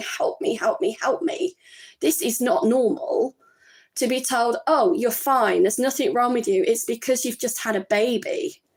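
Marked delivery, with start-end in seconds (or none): 0.0-3.3 mock-crying, tearful pleading tone. Recounting a call to the doctor after having a baby, retelling crying on the phone. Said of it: "literally crying on the phone to the doctor".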